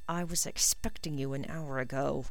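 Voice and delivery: quiet muttering under the breath. Snape appears at the tent flap as Draco arrives, muttered. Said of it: "he muttered".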